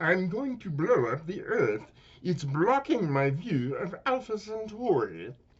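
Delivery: very high-pitched, loud announcing voice. Running through a series of cartoon impressions, doing a Marvin the Martian voice. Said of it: "Marvin the Martian".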